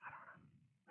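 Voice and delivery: soft, unvoiced whisper.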